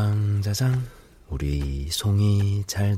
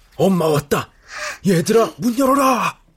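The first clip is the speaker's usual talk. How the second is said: hoarse, raspy put-on tiger creature voice; 11 semitones higher, 6 dB louder than usual. A tiger at the door calls to the children, pretending to be their mother; hoarse tiger voice. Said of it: "목이 쉬었단다".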